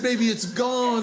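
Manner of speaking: ordinary talk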